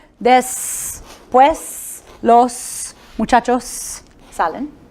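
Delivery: very slow Mexican Spanish, final s in salen sounded. Retelling how a Mexican volunteer read the sentence: imitating Mexican Spanish pronunciation. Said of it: "so she said".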